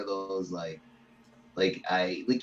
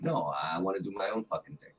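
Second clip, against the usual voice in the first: ordinary talk, nothing marked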